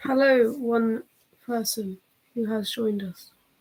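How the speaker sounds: very slow, every word drawn out long. Greeting the one viewer who just joined the live chat, very slow. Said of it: "I don't know why I said that so slowly".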